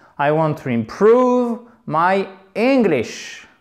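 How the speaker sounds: slow, wide stress on imPROVE and ENGlish.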